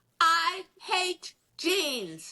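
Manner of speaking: mock screaming. Retelling how the show host screamed at the speaker before the show: imitating the host screaming. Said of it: "is screaming at me".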